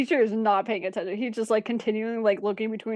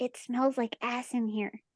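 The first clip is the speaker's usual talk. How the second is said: quiet, soft half-whispered aside, close and hushed; 2 semitones higher, 7 dB quieter than usual. Voicing a character who leans down to a player: half-whispering. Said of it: "leans down to whisper".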